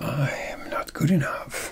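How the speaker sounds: breathy, sultry, soft seductive whisper. Speaker demonstrating a creative way to say a line, seductive. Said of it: "say it in a very seductive way".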